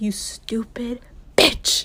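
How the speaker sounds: slow, quiet whisper under the breath. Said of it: "I'm like".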